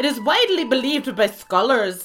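put-on Irish accent. Reading out the history of irish names: put-on irish accent. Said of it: "Can we not do any Irish accents".

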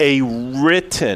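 written stressed, slow and drawn out. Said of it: "I just can't emphasize that word enough".

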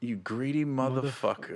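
very quiet, hushed, seductive and sultry delivery. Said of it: "it wasn't that sexy".

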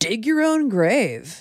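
surfer dude voice from the seventies. A performer introduces themselves, then does the Ghost of Christmas Future as a 1970s surfer dude. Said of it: "here's an impression of the Ghost of Christmas Future if he was a 1970s like surfer dude".

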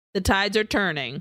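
ordinary talk, nothing marked

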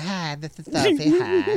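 very high put-on voice for a pet dog. Voicing a pet dog in a put-on voice. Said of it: "Sophie's voice, like".

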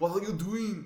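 hammy muscleman voice. Showing the actor's famous hammy delivery: stereotypical Arnold Schwarzenegger impression. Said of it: "the stereotypical Arnold thing".

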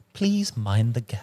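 posh, upper-class English accent. Demonstrating a joke acting warm-up among the group, posh British accent. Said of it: "stick a silver spoon up your ass and go".

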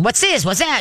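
high, alarmed, panicked dog-like yapping. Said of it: "being the alarmist to the whole house".

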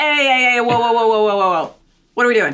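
put-on loud, high, hollered New York accent. When the door gets kicked open, Rose reacts, Rose in a New York accent. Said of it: "She turns uh, into a New Yorker".

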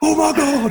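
high, mock-excited, frantic, going-nuts outburst. Speaker retells his companion watching through binoculars, imitating someone going nuts. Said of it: "he is going nuts".

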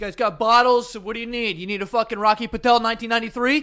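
loud, high, pushy host voice.

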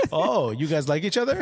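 ordinary talk

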